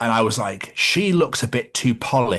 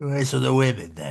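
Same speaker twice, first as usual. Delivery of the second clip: put-on creepy, leering old man voice; 2 semitones higher, 3 dB quieter than usual. Retelling what an old customer said at work: imitating a creepy old man. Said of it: "It's the way he said it".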